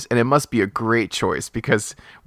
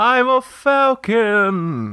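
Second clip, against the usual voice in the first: falcon voice, pitched way up; 11 semitones higher than usual. Voicing a character in a roleplay scene, in a falcon voice. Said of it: "That's my falcon voice".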